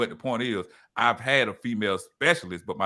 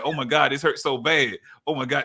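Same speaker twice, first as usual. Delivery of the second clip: mock pained yell, higher pitch; 3 semitones higher than usual. Retelling an unsedated colonoscopy heard from the lobby: imitating own past yelling in pain. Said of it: "she heard me in the lobby yelling like".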